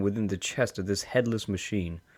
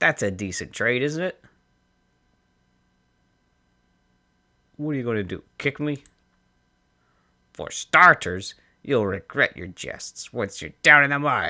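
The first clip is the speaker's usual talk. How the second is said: thin, tinny voice like from a machine; 2 semitones higher, 4 dB louder than usual. A bandit's voice rising from inside a headless machine, tinny voice. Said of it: "Her voice takes on an edge of panic. / There's a toll on these roads, / A tinny voice rises from within the chest of this headless machine".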